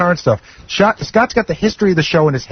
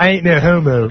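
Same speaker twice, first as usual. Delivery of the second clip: put-on Philadelphia accent. Told to hug his teammate, a player says his line in his best philly accent. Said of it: "Can I say it in my best Philly accent?".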